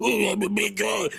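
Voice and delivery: rough monster-puppet voice. Complaining about how actors voice big monster characters; stereotypical big-guy voice. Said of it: ""I talk like this guy voice".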